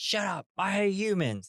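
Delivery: mock aggressive snap. Retelling a story scene where San rebuffs Ashitaka, imitating San's aggro snap. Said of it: "real aggro towards him".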